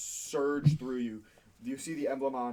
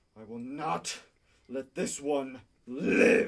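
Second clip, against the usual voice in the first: resounding booming voice, loud and very slow; 6 dB louder than usual. Voicing a being whose words boom over the party: booming voice. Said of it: "this voice booms over all of you".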